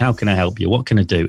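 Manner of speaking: ordinary delivery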